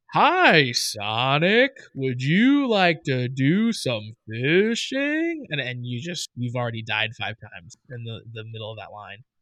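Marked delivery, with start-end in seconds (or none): 0.1-5.4 very slow, plodding country bumpkin voice. Complaining about a game character's slow voice lines, slow Big the Cat voice. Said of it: "he speaks so slowly".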